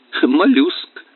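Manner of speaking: brief, terse, laconic delivery. Mick answers Johnny's question about a sudden little fountain: laconic. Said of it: "лаконично ответил он".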